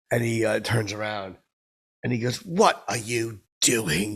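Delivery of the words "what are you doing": slow, cranky delivery. Retelling what Simon Cowell asked on turning around: imitating Simon Cowell. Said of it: "like Simon".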